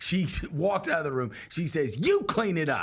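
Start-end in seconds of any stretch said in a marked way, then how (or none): 2.0-2.8 angry, commanding, sharp delivery. Retelling what she said after dropping her ice cream, mock-angry. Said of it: "She gets mad".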